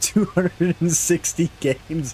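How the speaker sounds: laughing while talking. Reacting to a number, laughing while talking. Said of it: "I'm sorry for laughing".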